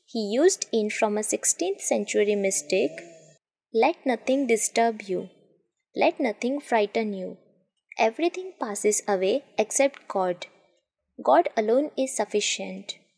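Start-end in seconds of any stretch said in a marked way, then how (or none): none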